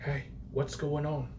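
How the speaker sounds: slow, hushed, creeping whisper. Voicing a character who whispers from behind a player: whispering. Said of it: "the voice whispers from behind you".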